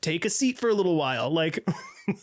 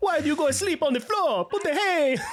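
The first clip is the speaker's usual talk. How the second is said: pitched-up Italian mother voice, scolding tone; 9 semitones higher than usual. Speaker imagining a mother's reaction to her son sleeping on the floor, imitating an Italian mother. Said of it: "some Italian mother being like".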